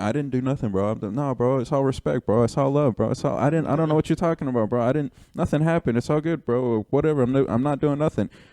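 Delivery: high, innocent-sounding, protesting tone, all wide-eyed. Retelling someone denying wrongdoing while being yelled at: imitating Earthquake acting innocent. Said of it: "Earthquake is being very innocent".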